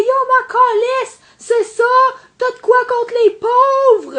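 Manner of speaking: grating, shrill, small voice, yelling. Retelling what a woman yelled back at the speaker, imitating a small annoying voice yelling. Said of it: "elle parle de même, pis elle crie, pis elle a une petite voix insupportable".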